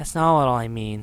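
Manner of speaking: plain reading voice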